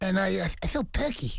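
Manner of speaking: bad put-on lisping boxer voice. Answering questions about the day as Mike Tyson: bad Mike Tyson impression. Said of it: "That's the worst impression I've ever heard".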